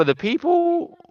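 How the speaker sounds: voice cracking mid-phrase, jumping suddenly high. Speaker talking with a friend about Cybertrucks, voice cracking. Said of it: "there's a little voice crack for you".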